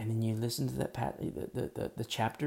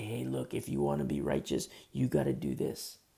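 put-on tempting, enticing whisper. Preaching on Leviticus, voicing Satan luring believers: imitating Satan whispering. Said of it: "he's gonna whisper and say".

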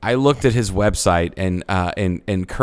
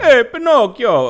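loud, very high, bad put-on Italian accent; 5 dB louder than usual. Imitating a friend who looks like Geppetto calling out: shameful Italian impersonation. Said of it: "just shameful Italian impersonation".

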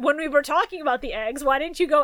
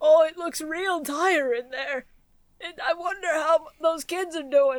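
put-on grandpa voice. Player describing grandpa watching from the distance the whole time; imitating grandpa. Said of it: "Grandpa off in the distance the whole time just going".

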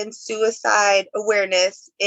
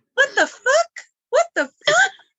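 put-on tiny, high, swooping little kid voice. Retelling what Ty used to say at two or three, imitating Ty's little kid voice. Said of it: "had the little kid voice".

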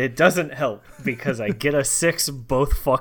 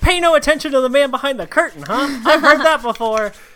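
shrill, very high, loud yell; 13 semitones higher, 8 dB louder than usual. Tabletop player voicing Gebetto as a man runs down the hallway, Gebetto yelling out. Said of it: "Gebetto yells out".

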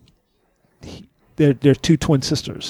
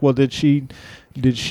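ordinary delivery

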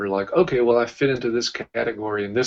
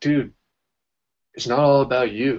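put-on kind but firm delivery; 3 semitones higher, 4 dB louder than usual. Retelling what a woman with you in Australia said to you: imitating kind but firm tone. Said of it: "the way she said it was really kind, but also really kind of like firm".

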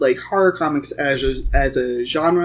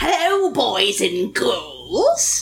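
creepy high-pitched put-on voice; 10 semitones higher than usual. A guess-who bit before discussing Tales from the Crypt: Crypt Keeper voice. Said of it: "I did practice my Tales in my Crypt Keeper voice and laugh".

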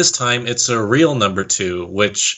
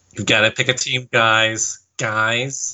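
put-on, mock Valley Girl accent. Imagining a pit stop ruling for the teams, in a Valley Girl voice. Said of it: "why he sounds like a Valley Girl now".

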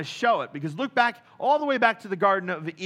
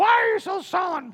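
high voice, harsh on ear; 11 semitones higher than usual. Bringing the Bible to life, the speaker voices Jezebel: grating Jezebel voice. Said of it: "a voice that would just grate on your nerves".

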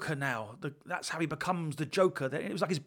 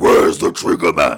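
very deep, loud, booming bat voice; 12 semitones lower, 16 dB louder than usual.

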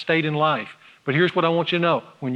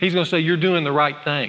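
plain

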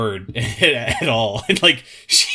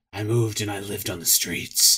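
low, hushed, gruff growl; 4 semitones lower, 6 dB quieter than usual. Mocking a game's long narration, speaker quotes Chun-Li in a Batman voice. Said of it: "She sounds like the fucking Dark Knight".

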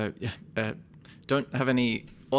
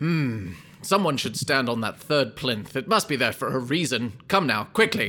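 assured, confident, strident voice. Game master voices the voice a player's character hears: confident, strident voice. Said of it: "a confident, strident voice".

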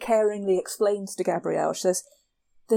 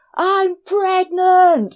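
shrill, high, very loud blurted yell; 10 semitones higher, 10 dB louder than usual. Retelling a scene where Xena silences everyone: imitating Xena yelling. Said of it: "So she yells".

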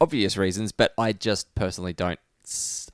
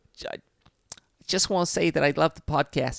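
put-on New Jersey accent, pitched up; 7 semitones higher than usual. On a podcast, a guest tries out a Jersey accent for the hosts. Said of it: "Jersey accent".

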